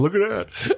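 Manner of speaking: put-on giggly voice, very high titter. Teasing a friend on camera by imitating his giggling. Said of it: "He's giggling, going".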